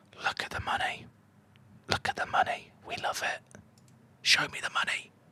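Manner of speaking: hushed, seductive whispering. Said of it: "Don't know why I'm whispering".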